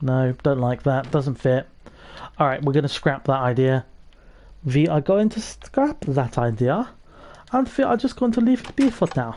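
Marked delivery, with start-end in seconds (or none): 4.6-9.4 crazy mad-scientist voice with German accent. Giving up on an idea that doesn't fit the artwork, crazy german scientist voice. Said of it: "I've adopted the crazy German scientist voice".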